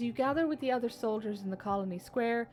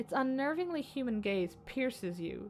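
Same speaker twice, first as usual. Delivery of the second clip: plain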